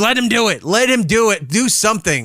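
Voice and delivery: angry outburst. Retelling own reaction when the companion stopped the doctor: retelling own angry outburst. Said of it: "I got all mad".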